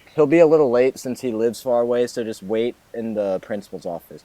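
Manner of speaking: ordinary delivery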